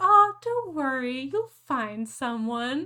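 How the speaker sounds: very loud, high, patronizing, condescending tone. Acting out the reply a single woman gets, in a mock-condescending tone. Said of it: "that just condescending manner".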